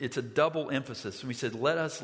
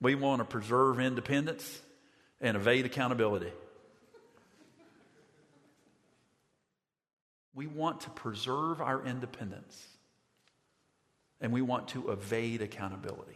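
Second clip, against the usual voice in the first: put-on plain, unadorned, South Georgia Southern accent. Retelling a man's answer after he raised his hand: imitating Henry's Southern accent. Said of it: "I'm going to try to do his accent the right way".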